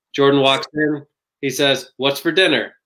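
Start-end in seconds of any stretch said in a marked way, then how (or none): 1.9-2.6 flat, wooden line reading. Reenacting a Space Jam scene to show poor acting: imitating Michael Jordan's bad acting. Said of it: "brief reenactment of Michael Jordan in Space Jam".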